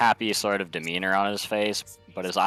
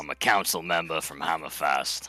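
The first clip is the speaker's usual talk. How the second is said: put-on Scottish accent. Introducing a dwarf character in character at the table: scottish accent.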